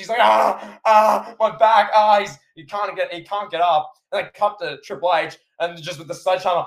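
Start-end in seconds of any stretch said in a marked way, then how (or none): 0.2-2.2 high-pitched, loud, anguished groan. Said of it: "He's, he's in anguish".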